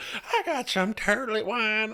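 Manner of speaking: very high, whistly cartoon voice. Joking about turlet wine with the other hosts; Herbert from Family Guy impression. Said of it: "my best impression of the whistle guy".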